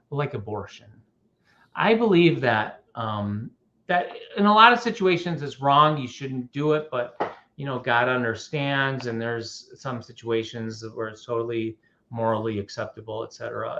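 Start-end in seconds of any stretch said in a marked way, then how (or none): 0.1-0.8 voice dropped down to a lowered hush. Retelling what she answered about church teachings: imitating someone lowering her voice. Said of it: "she lowered her voice and looked around".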